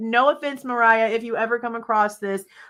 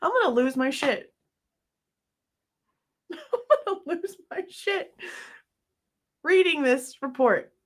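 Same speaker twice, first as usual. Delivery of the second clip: words breaking up in hard laughter, pitched up; 5 semitones higher, 4 dB quieter than usual. Reading a report aloud and cracking up: laughing hard while talking. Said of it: "I know I'm laughing really hard".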